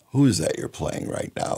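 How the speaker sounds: fast, breathy, commanding whispered voice of God. Retelling the radio station boss calling up to ask about a record, imitating Bill Compton's voice of God. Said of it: "with that voice of God of his".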